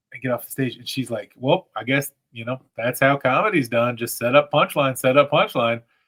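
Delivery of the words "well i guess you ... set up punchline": said with a slight touch of sarcasm. Retelling what a woman said after your open mic set, mock slightly sarcastic remark. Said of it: "in a little bit sarcastic".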